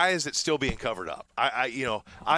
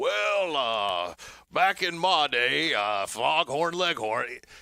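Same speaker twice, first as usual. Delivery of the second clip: very slow, halting senator voice, stretched words, lingering uhs. Showing how a louisiana senator now talks, like foghorn leghorn. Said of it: "he sounds just like you and I. And now that he's in the Senate, he's like".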